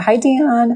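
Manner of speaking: voice cracks mid-word. Greeting Dion, voice cracking. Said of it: "my voice cracked".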